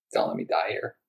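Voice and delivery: sobbing, broken-down, tearful, crying, pleading tone. Retelling breaking down before being wheeled into surgery: imitating own crying plea.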